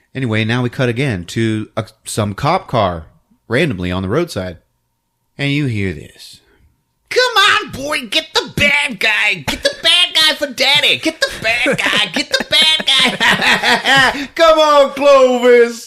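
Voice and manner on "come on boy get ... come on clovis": very high, slow, coaxing pet-talk voice. Retelling a scene where a cop urges his cat: voicing Andy the cop. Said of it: "it's this cop, Andy".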